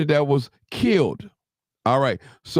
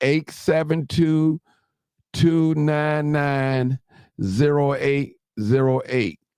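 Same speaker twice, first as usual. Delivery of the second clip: very slow, deliberate, drawn out, digit by digit; 2 semitones lower than usual. Giving listeners the call-in phone number, very slow. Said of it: "I'm gonna say it real slow".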